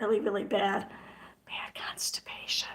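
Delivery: hushed, breathy, under-the-breath whisper. Speaker describing their health trouble, whispering so no one can hear. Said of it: "I'm whispering so that no one can hear".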